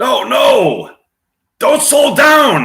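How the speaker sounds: very high-pitched, drawn-out yell. Acting out a scene yelling from a moving convertible: yelled as Keanu Reeves. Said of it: "yelling from a moving convertible".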